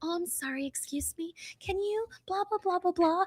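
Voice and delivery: soft, high, cutesy, sweet little voice. Speaker shows listeners the voice she uses in public: cute little voice. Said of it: "a cute little voice like that in public".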